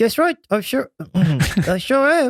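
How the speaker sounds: pursed-mouth voice, lips pressed hard, high and slow. Answering the game master's call for confirmation: [name] talking with a pursed mouth. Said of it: "this is [name] talking with a very pursed mouth".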